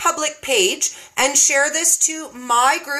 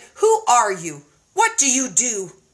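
put-on strong, unbending, swooping British accent; 4 semitones lower than usual. After KetoCon, retell what a woman said to your face, in [name]'s staunch British accent. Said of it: "in the most staunch British accent I've ever seen".

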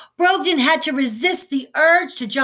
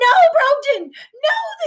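piercing, very high shrieked cry; 13 semitones higher, 4 dB louder than usual. Reading a story, two women scramble from the table after brogdon, shrieking. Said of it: "they shrieked".

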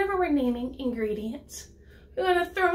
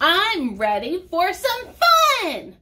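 loud, big, swooping shouting voice; 3 semitones higher, 7 dB louder than usual. Voicing the fifth pumpkin's line in a lesson on voices, in a shouting voice. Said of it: "that was our shouting voice".

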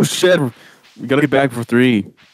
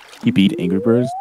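ordinary delivery

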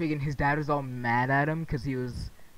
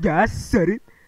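put-on voice, pitched higher and louder; 5 semitones higher, 9 dB louder than usual. Retelling a movie scene where a man turns to his wife, imitating the blackest voice ever. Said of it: "Like in the blackest voice I've ever heard".

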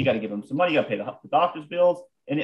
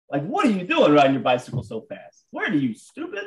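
berating, scolding tirade. Having stopped the car, the speaker re-enacts yelling at a fast cyclist, retelling berating someone. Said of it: "I just start berating this guy".

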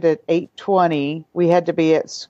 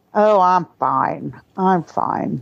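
sassiness in the voice. Answering a greeting at the start of an interview: sassy tone. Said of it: "I sense sassiness in your voice".

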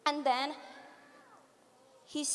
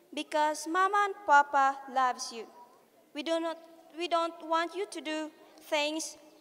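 ordinary delivery

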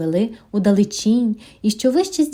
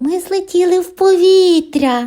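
high, drawn-out little bunny voice calling out; 7 semitones higher, 4 dB louder than usual. Narrator reads the little bunny's line after he notices something unusual, calling out. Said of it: "загукав він".

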